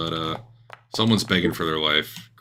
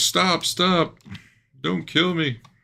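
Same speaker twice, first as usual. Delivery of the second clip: very high, drawn-out, panicked pleading yell; 12 semitones higher than usual. A game narrator voices a screaming character, yelling in Dieter's voice. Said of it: "you're yelling in Dieter's voice".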